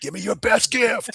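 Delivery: fake playful shouting, very high, slow, drawn-out. Joking about adding exclamation marks to a form label: mock yelling at people. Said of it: "I'm, like, yelling at people".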